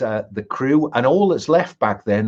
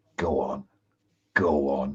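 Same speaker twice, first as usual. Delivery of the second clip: very slow, very drawn-out half-whisper; 10 semitones lower, 7 dB quieter than usual. Voicing Grandfather urging a player to strike: half-whispering as Grandfather. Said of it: "have Grandfather whisper in your ear".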